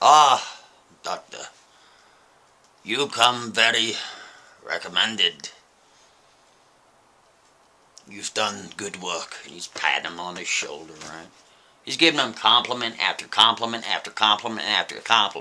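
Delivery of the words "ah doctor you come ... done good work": put-on thick Russian accent, slow. Retelling a gentleman complimenting Dr. Szymanski in a hallway; thick Russian accent. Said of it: "he has this thick Russian accent".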